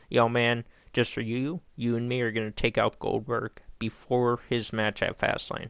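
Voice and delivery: ordinary talk, nothing marked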